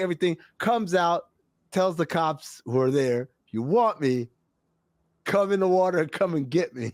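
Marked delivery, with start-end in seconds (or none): none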